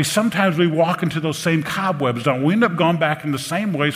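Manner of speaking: usual speaking voice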